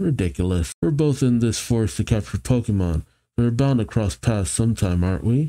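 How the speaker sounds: plain reading voice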